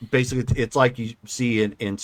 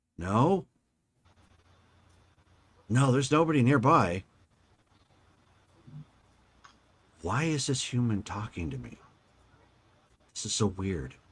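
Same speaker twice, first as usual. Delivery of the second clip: put-on voice of a talking plant; 4 dB quieter than usual. Voicing a plant puzzled that a human talks to it: voicing a talking plant. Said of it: "And then you hear".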